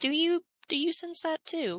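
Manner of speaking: loud stage whisper. In character during a tabletop game, trying to act nonchalant, loud stage whisper. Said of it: "in a whisper".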